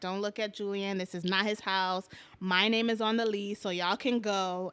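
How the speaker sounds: plain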